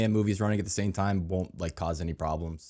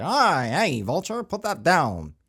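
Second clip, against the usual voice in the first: put-on old-timey voice, higher and louder; 9 semitones higher, 5 dB louder than usual. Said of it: "do they use the old-timey voice? Like, are we gonna get a Nick Cage".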